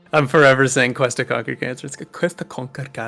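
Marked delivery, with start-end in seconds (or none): 1.8-3.1 Scottish accent, much lower, quieter. Speaker repeats a phrase they're forever saying, in a Scottish accent. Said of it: "Good accent, fellow Scot brother".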